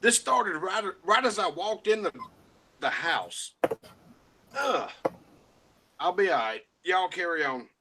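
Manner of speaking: speech broken up by hiccups. Apologizing to the group after walking in: hiccuping while talking. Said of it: "I've got the hiccups and I can't damn talk".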